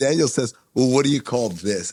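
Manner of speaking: ordinary talk, nothing marked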